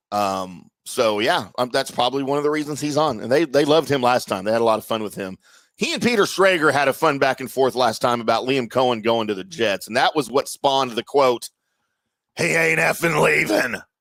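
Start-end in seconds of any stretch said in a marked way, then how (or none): 12.3-13.8 put-on male voice, high, scratchy, rough and creaky. Retelling a quote about a coach leaving: j p impression. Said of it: "That's my J P impression".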